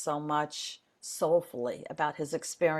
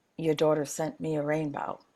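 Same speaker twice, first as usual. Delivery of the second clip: whispered delivery. Retelling hugging a man and speaking into his ear, retelling a whisper. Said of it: "I whisper into his ear".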